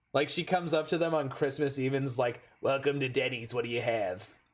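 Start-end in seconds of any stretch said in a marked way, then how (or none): 2.6-4.3 put-on smoky, cigarette-roughened waitress voice. Telling a story about a Denny's waitress greeting them on Christmas Eve, cigarette-voice waitress. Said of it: "the classic like cigarette voice waitress".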